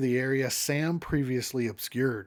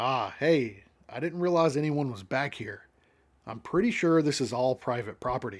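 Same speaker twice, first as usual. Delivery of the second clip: usual speaking voice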